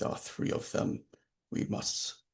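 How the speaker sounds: whispered, barely above the breath, very soft, breathy. Narrating a character's words whispered to Hans: whispering. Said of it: "he he whispers to Hans".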